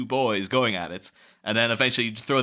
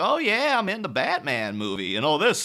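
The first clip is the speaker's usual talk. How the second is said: chatty, swooping Southern twang with a drawl; 7 semitones higher than usual. Talking about an actress's interviews, quoting how she talks: Kim Basinger's Southern twang. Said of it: "she's got like a real Southern twang".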